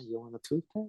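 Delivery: hushed, soft voice. Retelling a movie moment, quoting a character's line in a very quiet voice. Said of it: "In his very quiet voice".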